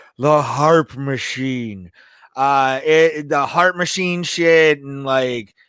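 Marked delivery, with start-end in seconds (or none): 0.2-1.9 put-on gruff, rough wrestler voice. Talking about the harp machine in a Jesse Ventura voice. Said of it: "I'm gonna use my Jesse Ventura voice".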